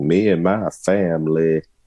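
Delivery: very slow, drawn-out, fake Southern drawl. Trying to copy a coach's put-on drawl: imitating Brian Kelly's fake Southern accent. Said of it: "I can't even do it because it just doesn't sound natural".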